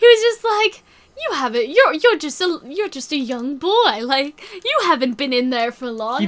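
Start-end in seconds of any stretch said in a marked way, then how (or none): 1.2-6.3 exaggerated put-on British accent, laid on thick. Retelling what a character said to a young boy: imitating in an overly British accent. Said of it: "he's not that British".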